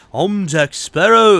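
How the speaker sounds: loudly belted, botched pirate voice. Doing a quick impression of the pirate character: Jack Sparrow impression. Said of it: "That did not sound like Jack Sparrow at all".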